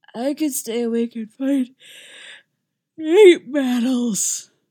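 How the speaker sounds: put-on drowsy child voice, half-asleep mumble. Narrating a story, a sleepy young boy answering as his mother picks him up: sleepy mumble. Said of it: "Uller mumbles".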